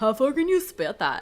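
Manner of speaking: dopey, goofy doofus voice. Reading a story aloud, voicing one character's line: doofus voice. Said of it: "What voice is David again? Doofus".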